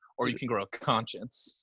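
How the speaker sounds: low, slow, quiet, hushed deadpan aside. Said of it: "It's like".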